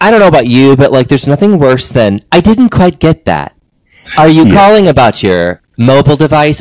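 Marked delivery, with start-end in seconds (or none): 2.3-6.6 sing-song, recorded automated phone menu voice. Retelling a call to a phone company: imitating automated phone robot. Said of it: "I get so angry at the robot".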